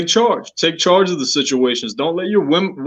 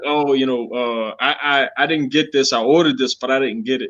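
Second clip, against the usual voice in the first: deflated, let-down, disappointed woman's voice; 4 semitones lower, 3 dB quieter than usual. Advising guys on restaurant etiquette, imitating a disappointed woman. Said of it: "you can tell she's disappointed".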